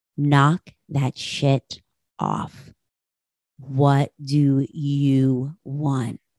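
very calm, level, slow, flat deadpan. Retelling what a woman said to her after a long rant; imitating a deadpan reply. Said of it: "she says very calmly and deadpan to me".

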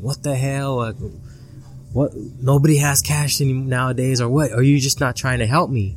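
put-on frantic, worked-up freak-out rant. Retelling a man's reaction to being refused cash, acting out him freaking out. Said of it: "he started freaking out".

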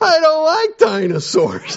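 acted, very high, drawn-out sobbing child's bawling wail. Speaker retells a clip of a kid opening a dinosaur toy at Christmas, imitating a kid bawling. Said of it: "started bawling and going".

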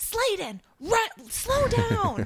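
very high, very slow, swooping, drawn-out yell. Retelling a dad at a game yelling at his running kid: imitating a dad yelling. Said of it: "you could just hear the dad yell".

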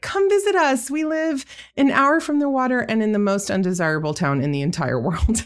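cheery, high, bright salesperson pitch.

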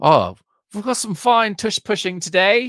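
faintly British accent at a very high pitch. Joking about how football players in 1879 would sound: Billy Zane vaguely British voice. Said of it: "where it's like vaguely British".

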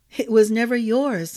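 ordinary talk

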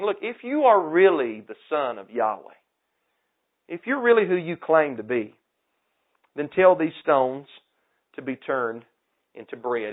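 mocking, goading, swooping sarcastic taunting tone. Retelling the devil's challenge to Yeshua, imitating a sarcastic taunt. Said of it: "He's being sarcastic".

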